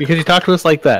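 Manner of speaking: mock indignant protest, loud and high-pitched.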